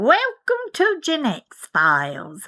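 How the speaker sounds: fake British accent, slow, drawn out, swooping. Reading a podcast welcome line on request, put-on British accent. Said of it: "Can you read your line in a British accent?".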